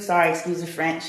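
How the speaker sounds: plain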